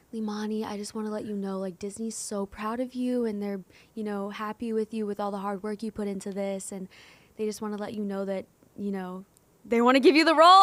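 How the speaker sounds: acted, crushed, devastated, sorrowful tone. Retelling a phone call from a manager: imitating someone sounding devastated. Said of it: "she sounds so devastated".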